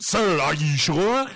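terrible put-on French-Canadian accent, high and slow. Retelling a card-game scene, voicing Jacques Renault's terrible French-Canadian accent. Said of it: "he has a terrible French-Canadian accent".

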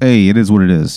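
put-on a touch of Italian lilt, light accent. Voicing the cat as it answers a player's threat: a little Italian accent. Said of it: "he's starting to sound a little more Italian".

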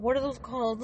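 puzzled, forgetful voice, groping for a lost word. Laughing while retelling how the other speaker asked: imitating a friend forgetting a word. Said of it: "the way you were like".

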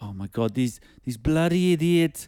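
high put-on South African accent. Retelling what tourists filming a cheetah said: imitating a South African accent. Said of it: "apologies for the accent".

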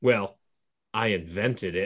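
put-on sinister menace. On a rewatch, speaker quotes a character's line; mock-murderous tone. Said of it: "He says it in such a shitty, "I want to kill everyone" sort of way".

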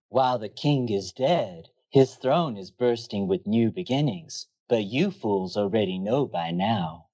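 seductive, sultry late-night radio DJ patter. Narrating a story recap to listeners, sultry voice. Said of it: "in your most sultry impression".

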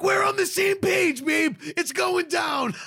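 shrill cheering shout, very high and excited. Retelling what they shouted to her, re-enacting a yell. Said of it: "I'm yelling".

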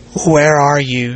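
struggling to stay calm. A woman asks a cackling man where he is, struggling to keep calm. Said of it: "she said, struggling to keep calm".

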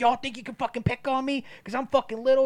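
mock belligerent, loud, shrill, very high screaming. Retelling a man's outburst at everybody around him; mock-aggressive loud retelling. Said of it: "getting like all loud with everybody and he's being like super aggressive".

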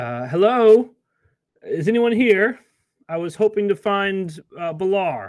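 calling out loudly. Narrator voices the temple's High Priestess calling down from the top deck, shouting from above. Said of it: "a voice you recognize as the High Priestess of the temple shouts".

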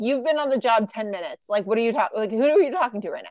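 plain

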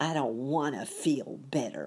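growling through the words. The pessimist rejects a cheerful suggestion, growled. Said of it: "growled the pessimist".

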